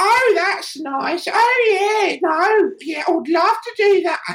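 very high, slow, comic English accent, Oh stretched. Showing how people in a comedy film talked: imitating Monty Python English accent. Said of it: "the temperament of all those people talking like this".

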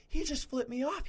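put-on shrill scream, pitched very high. Retelling how a lady in the stands started screaming: imitating a lady screaming. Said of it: "she just starts screaming".

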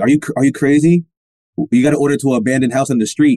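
normal talking voice

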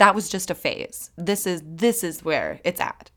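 ordinary delivery

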